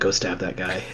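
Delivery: very quiet, hushed whisper. Acting out a card telling someone to stab another: acting out a whisper. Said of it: "whispering to them".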